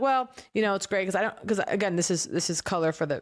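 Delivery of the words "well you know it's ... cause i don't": ordinary talk, nothing marked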